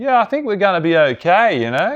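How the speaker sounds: put-on sing-song British radio accent. Describing a show, the speaker imitates a voice on the radio in a British accent. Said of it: "this British voice on the radio be like".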